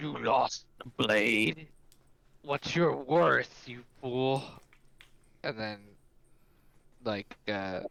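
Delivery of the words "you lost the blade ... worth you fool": infernal, demonic voice. Describing what the demonic voice says to the party; demonic voice. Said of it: "like this like demonic voice just saying".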